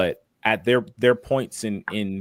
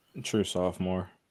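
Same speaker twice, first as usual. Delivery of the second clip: downcast, deflated, sad and quiet; 7 dB quieter than usual. Answering another speaker's question, sounding sad. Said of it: "Why do you sound so sad?".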